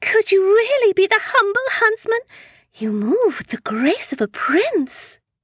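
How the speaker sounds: very high, innocent put-on fairy-tale maiden voice. Speaker playing a poor maiden addressing a possible huntsman: put-on poor-maiden voice. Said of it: "I'm just a poor maiden alone in the woods".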